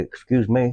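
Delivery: put-on sarcastic tone. Retelling a reply to people who bump into them with carts: imitating own sarcastic tone. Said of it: "I'll just kinda sarcastically say".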